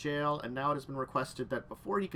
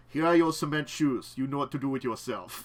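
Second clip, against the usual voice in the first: put-on mafia gangster voice; 6 dB louder than usual. A game master voices a mafia character speaking to the players' team; mafia gangster voice. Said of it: "I'm doing the mafia voice".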